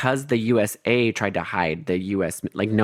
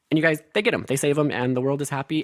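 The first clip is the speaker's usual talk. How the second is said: usual speaking voice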